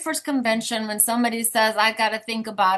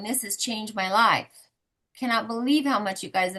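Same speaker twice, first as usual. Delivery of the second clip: mock-weeping, tearful voice, faster; 4 dB quieter than usual. Retelling Amanda's reaction to the help she received, imitating Amanda weeping. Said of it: "Amanda's in tears and weeping".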